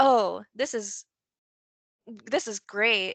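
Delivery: loud, heavy, dripping mock-sarcastic tone. Retelling a comment from a viewer: imitating a sarcastic comment.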